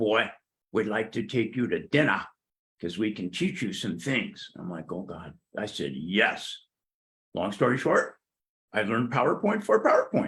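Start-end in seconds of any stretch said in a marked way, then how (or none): 0.0-4.5 put-on South African accent in English. Retelling what an older man said to you, South African accent impression. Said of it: "in his great South African accent".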